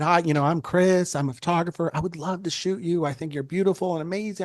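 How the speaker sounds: put-on corny, over-sweet, cheesy flattering tone. Retelling own first words to someone admired: imitating own cheesy pitch. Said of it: "being all cheesy and stuff".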